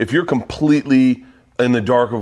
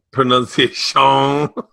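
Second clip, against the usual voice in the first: put-on Cajun character voice, higher and louder. Trying out how to say a word while being corrected, in Adam Sandler's Cajun Man voice. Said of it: "You're doing the Adam Sandler, Cajun man".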